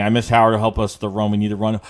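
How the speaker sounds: normal talking voice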